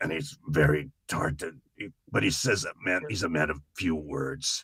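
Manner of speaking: voice sounding injured and scarred in the throat. Speaker shows how his character with an injured throat talks: Agent Schmidt's scarred-throat voice. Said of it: "so he talks like this".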